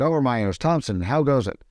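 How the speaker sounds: ordinary talk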